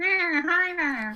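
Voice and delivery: very high, loud, annoying sidekick voice. Imagining the little creature that follows Totoro talking: imitating an annoying cartoon sidekick voice. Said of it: "that voice would be even worse".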